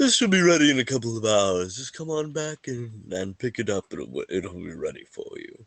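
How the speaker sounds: cartoon sloth character voice. Voicing a shopkeeper telling customers when to return: Zootopia sloth banker voice.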